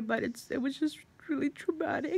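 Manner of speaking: on the edge of crying. Recounting a traumatic night, the speaker is holding back tears. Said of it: "I'm trying not to cry".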